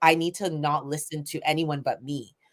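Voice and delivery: normal talking voice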